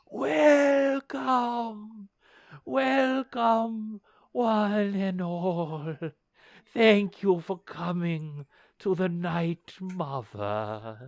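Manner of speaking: sleepy whisper. Game master voicing a tall gaunt elf greeting the players, in a sleepy whisper. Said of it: "whispers to you in a in a voice that sounds like it comes from deep, deep sleep".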